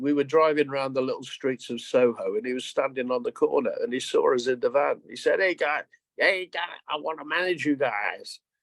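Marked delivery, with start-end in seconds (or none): 5.4-8.4 bad, fake put-on American accent. Retelling a man on a Soho corner hailing the band, terrible American accent. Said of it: "In my terrible American accent".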